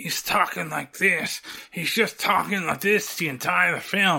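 words spat out one side of the mouth. Describing a film role, imitating Sandler talking out of the side of his mouth. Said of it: "like I was just doing there trying to imitate it".

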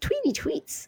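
very high, soft, tiny birdlike chirp. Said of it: "They definitely have a very high-pitched tweety tweet".

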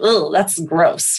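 mock visceral, grossed-out disgust. Retelling a past reaction to the word sisterhood: imitating a visceral disgusted reaction. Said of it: "got a visceral, like".

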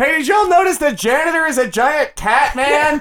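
very high, loud shout. Voicing a character who disrupts class by calling out: yelling to a crowd. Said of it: "by yelling".

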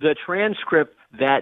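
very slow, drawn-out delivery.

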